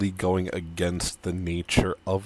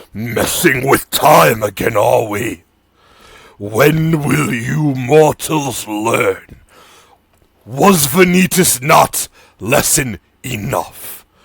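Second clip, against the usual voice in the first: very loud, ancient, cold, thundering, booming voice; 4 semitones higher, 10 dB louder than usual. A game master voices a mysterious voice addressing the mortal players: loud, booming, ancient voice. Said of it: "You hear a loud, booming voice, ancient and cold".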